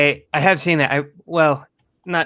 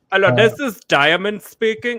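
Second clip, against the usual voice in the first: put-on Indian accent, high and loud; 7 semitones higher, 5 dB louder than usual. Retelling transferred calls with fake english names: imitating an indian accent. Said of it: "an Indian sounding person".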